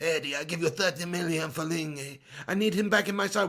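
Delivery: Sicilian gangster voice with mobster manner. Imagining a manager phoning a club chairman late at night: José Mourinho impression. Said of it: "Why does he sound like a, a Sicilian gangster".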